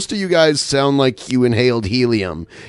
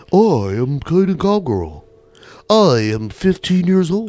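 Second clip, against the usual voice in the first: put-on pitched-up teen voice like a talk-radio host; 5 semitones higher than usual. Mocking a young boy's try at sounding like radio: imitating Caden Cowgirl's radio voice. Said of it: "even Caden Cowgirl had a better radio voice".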